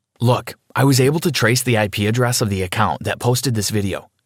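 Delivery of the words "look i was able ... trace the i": ordinary delivery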